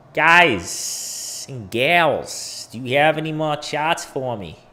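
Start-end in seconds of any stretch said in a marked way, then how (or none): 2.7-4.5 put-on Boston accent. Asking the guys and gals for more charts, in a Boston accent. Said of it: "It's my Boston accent".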